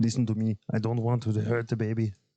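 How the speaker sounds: bad, botched put-on Austrian accent. Trying again after a high-pitched attempt, doing a bad Schwarzenegger impression. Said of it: "that one actually made it worse".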